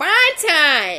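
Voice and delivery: belted out shrill and high.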